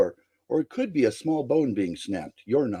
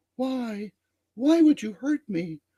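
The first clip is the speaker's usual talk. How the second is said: put-on extremely airy, very high little-girl voice; 10 semitones higher than usual. Game narrator voicing the little girl the dragon shrank into, extremely airy voice. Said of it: "extremely airy voice".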